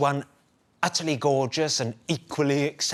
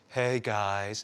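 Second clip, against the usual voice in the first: mocking flat monotone, lower pitch and quieter; 5 semitones lower, 5 dB quieter than usual. Imitating an influencer who is being mocked: imitating a monotone voice. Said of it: "his monotone voice".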